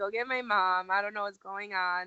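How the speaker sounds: usual speaking voice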